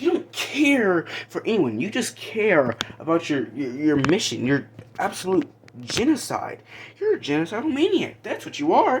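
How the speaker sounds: put-on mocking, gloating voice. Retelling a movie scene where Gamora mocks Thanos: imitating Gamora mocking and gloating. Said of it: "laughing and gloating and, and just mocking".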